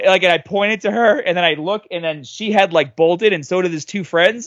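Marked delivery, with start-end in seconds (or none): none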